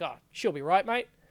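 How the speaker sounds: Sydney Australian accent. Showing how the phrase sounds said in Sydney: Sydney Australian accent. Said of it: "So I'd say it like".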